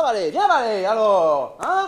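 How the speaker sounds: loud, high-pitched farmer's calling voice.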